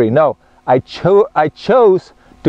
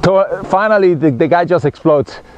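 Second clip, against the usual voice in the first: plain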